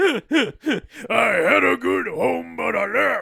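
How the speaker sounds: gravelly, booming, loud, very slow, drawn-out rasp. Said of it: "That was me doing a [name] impression".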